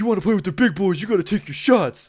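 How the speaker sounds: mock jeering shout, loud and high. Retelling a friend yelling at someone to take a shot: imitating Brandon yelling. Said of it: "Brandon's yelling at him".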